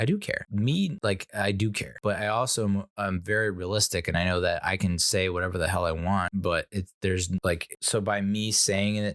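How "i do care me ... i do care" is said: usual speaking voice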